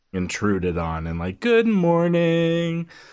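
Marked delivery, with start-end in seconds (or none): 1.4-2.9 falsely bright, fake cheery, very high-pitched voice. Retelling how a parent woke them every day: imitating a fake cheerful voice. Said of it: "fake cheerful voice".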